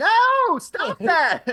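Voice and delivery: put-on upset, shrill, very high, very loud boy's yell. Voicing a boy as a player cuts a fishing line: the boy yells. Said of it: "The boy yells".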